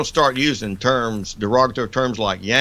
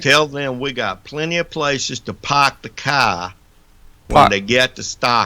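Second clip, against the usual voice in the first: imitated Boston accent. Doing an impression for visitors from Massachusetts: put-on Boston accent. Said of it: "best impression".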